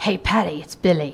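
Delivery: low-key, sexy, purring voice.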